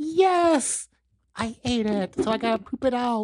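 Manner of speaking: high puppet voice with drawn-out yes. Answering a question put to the puppet: voicing a puppet. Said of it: "Hey, puppet, is there an afterlife?".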